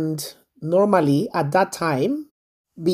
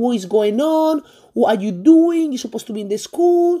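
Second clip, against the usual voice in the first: half-voiced, mild, angry scolding yell; 6 semitones higher than usual. Retelling a mother finding her daughter home with a boy: imitating someone screaming. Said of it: "She started screaming".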